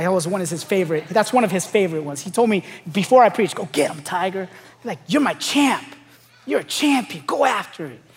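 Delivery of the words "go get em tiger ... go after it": put-on heavy Mexican accent. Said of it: "he has a heavy accent".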